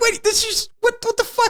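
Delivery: very high-pitched, baffled outburst.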